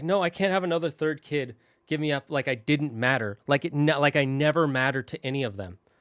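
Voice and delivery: plain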